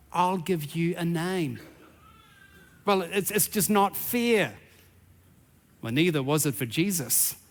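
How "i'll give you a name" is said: hushed, soft half-whisper like a stage whisper. Voicing the Creator answering a worried question: half-whispering as God. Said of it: "the Father again whispers".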